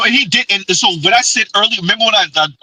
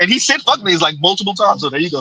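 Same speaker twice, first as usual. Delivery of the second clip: ordinary talk, nothing marked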